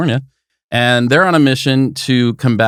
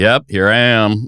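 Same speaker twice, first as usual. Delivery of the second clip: mock bored, unexcited, flat voice. The host teasing the assistant about how the greeting sounded: imitating Tiffany Pope's unexcited reply. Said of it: "You did not sound excited to be here".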